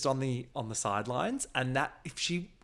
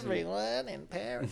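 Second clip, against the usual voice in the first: put-on mocking voice, higher; 6 semitones higher than usual. Retelling a reality show scene, imitating Janet's mocking voice. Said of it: "I love when Janet does her mock voice".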